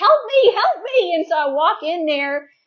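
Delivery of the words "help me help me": loud, high-pitched yelling. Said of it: "my husband is yelling".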